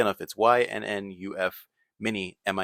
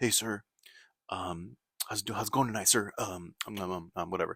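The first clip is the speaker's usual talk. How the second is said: quieter, mock-polite, overly nice manner; 8 dB quieter than usual. Retelling how a man who wanted food greeted him, mock-polite greeting. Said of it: "they're very nice".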